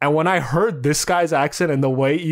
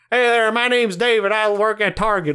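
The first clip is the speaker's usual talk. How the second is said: higher-pitched American Southern drawl; 6 semitones higher than usual. Showing how the same line sounds down south: southern us accent. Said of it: "then you go down south".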